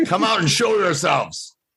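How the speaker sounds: very high, put-on goblin creature voice. Speaking as a character during a tabletop roleplaying game, put-on hobgoblin voice. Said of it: "in my best Hobgoblin imitation".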